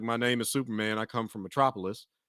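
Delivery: light, understated Southern twang. Showing how Superman could sound with a subtle Southern twang. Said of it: "you got talking like this".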